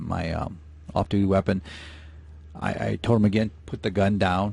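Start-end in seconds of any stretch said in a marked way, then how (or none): none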